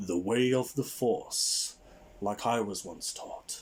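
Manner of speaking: composed, calm, serene, tranquil wise teacher voice. Narrator voices a mysterious voice offering to teach Miss Morell; calm yet booming voice. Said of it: "a calm yet booming voice calls".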